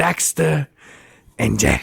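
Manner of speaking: slick, sleazy New York businessman voice. Hyping a video game's advertising as a businessman: sleazy New York accent. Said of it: "Some sleazy New York uh, businessman".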